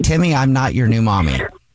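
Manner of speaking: usual speaking voice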